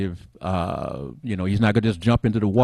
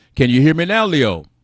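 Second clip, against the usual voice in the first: projecting slightly louder with a slightly higher voice; 6 semitones higher, 6 dB louder than usual. Checking whether the translator on the call can hear, talking a little louder. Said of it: "I'll talk a little louder on my end".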